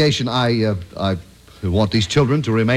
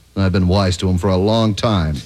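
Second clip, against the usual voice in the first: usual speaking voice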